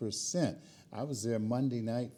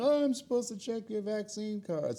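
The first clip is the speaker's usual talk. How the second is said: very high-pitched, calling-out yell; 12 semitones higher than usual. Retelling how a woman called out as the speaker kept walking: imitating someone yelling. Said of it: "I heard her yelling".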